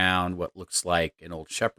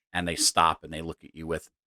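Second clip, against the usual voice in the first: normal talking voice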